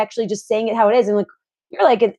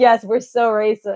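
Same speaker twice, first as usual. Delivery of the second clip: put-on laughing while speaking. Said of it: "I just cracked up".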